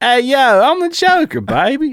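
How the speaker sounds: bad Philadelphia accent, very high pitched and slow. Trying again to do the Joker line in a Philadelphia accent. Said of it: "I can't do Philly".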